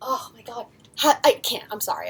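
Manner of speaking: gushing excitement. Talking about an artist who might tune in, fangirling. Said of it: "I'm just like fangirling right now".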